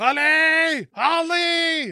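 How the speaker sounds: very high, loud, shouted scream.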